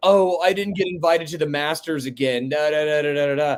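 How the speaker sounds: ordinary delivery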